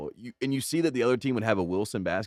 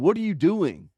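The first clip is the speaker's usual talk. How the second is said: high-pitched, loud yelling; 6 semitones higher, 4 dB louder than usual. Retelling how the coach yelled in the huddle: imitating a coach yelling. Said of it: "he just was yelling".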